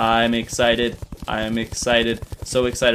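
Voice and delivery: flat, slow, mechanical robotic monotone. Talking about finishing the room with clay, sounding like a robot. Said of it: "I sound like a robot".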